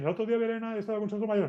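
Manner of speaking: very fast, rattled-off Spanish.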